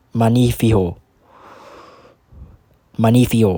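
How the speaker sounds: magnifico pronounced with Cuban Spanish accent. A speaker demonstrates how the word is said in Cuban Spanish: Cuban Spanish accent. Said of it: "in the Cuban accent we they say it like this".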